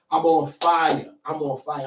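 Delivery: put-on slow New Jersey accent pronunciation of fire. Speaker recalling how they were feeling that day: jersey accent. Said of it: "the way I said fire in my Jersey accent".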